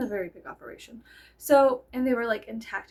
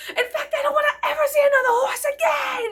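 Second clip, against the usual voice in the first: acted-out unhinged screaming, shrill and very high; 5 dB louder than usual. Retelling cheering at protesters out the sunroof: retelling own screaming. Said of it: "just screaming, like, insanity at these people".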